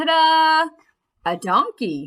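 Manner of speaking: big showy, loud, high, drawn-out excited ta-da. Showing how exclamation points are read aloud: said with emotion. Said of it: "The exclamation points tell me to say it with emotion, like this".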